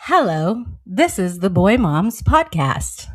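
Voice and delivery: answering machine recorded-message voice. Podcast host asked to just say something; answering machine voice. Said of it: "I do like the answering machine voice".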